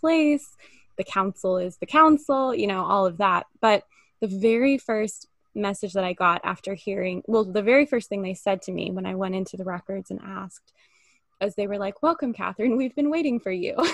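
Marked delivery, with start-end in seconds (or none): 12.0-13.8 stiff, formal, ceremonious delivery. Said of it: "it was so formal for me".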